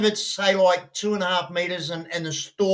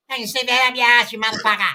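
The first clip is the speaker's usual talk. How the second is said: put-on Australian comedian voice, higher pitch; 5 semitones higher, 4 dB louder than usual. Imitating an Australian comedian for another speaker: Rodney Rude voice. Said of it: "he talks like that".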